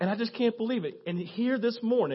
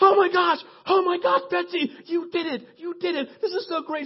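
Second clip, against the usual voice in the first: put-on excited freak-out, higher, slower; 10 semitones higher, 6 dB louder than usual. Retelling how two people reacted when she got the answer, acting out them losing it. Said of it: "Dallas and Cadillac lose it".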